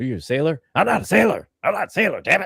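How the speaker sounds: high, adamant, unbudging tone. Retelling a scene, the speaker voices Popeye: Popeye voice, mock-adamant denial. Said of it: "So he's adamant that he's not a sailor".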